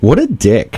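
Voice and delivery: mock, put-on playfully excited tone. Retelling an overheard remark by a friend, mock playfully excited. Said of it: "in a playfully excited tone".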